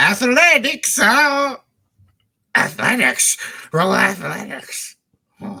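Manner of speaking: silly, very high, slow goofy voice. Calling for an athletics roll after being asked to say it funny: funny voice. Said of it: "if you could say it in a funny way".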